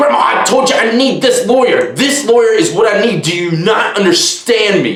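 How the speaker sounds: high, snappy scolding tone. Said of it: "he would just be snapping on his grandma".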